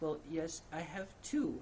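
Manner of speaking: small, cute, sweet little voice, slow. Quoting an author's interview answer about writing mentors, in her little adorable voice. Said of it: "she's got this little adorable voice".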